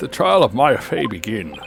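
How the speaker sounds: put-on elderly man voice. Reading a game character's line aloud: old man voice. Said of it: "I gave him an old man voice".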